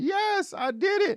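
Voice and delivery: put-on shrill, very drawn-out happy scream. Retelling a man's joy at finally starting a tractor, imitating someone screaming. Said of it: "He is screaming".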